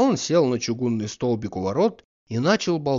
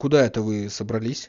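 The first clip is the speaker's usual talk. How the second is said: ordinary delivery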